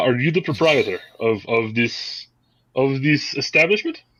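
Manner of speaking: clumsy, really bad put-on Czech accent. Voicing a harsh, well-dressed woman asking about the proprietor: bad Czech accent. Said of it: "she's speaking in a really bad Czech accent".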